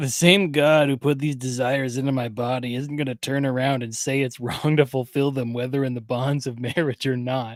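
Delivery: oily, smug, smarmy guy voice. Imagining a guy hitting on someone at a church group, smarmy dude voice. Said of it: "I'm going to do my best smarmy dude voice".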